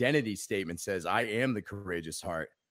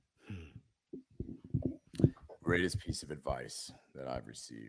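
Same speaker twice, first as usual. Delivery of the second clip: lowered voice, much lower pitch; 6 semitones lower, 6 dB quieter than usual. Guest repeating the host's question back, lowered voice. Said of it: "sorry, I wasn't trying to lower my voice".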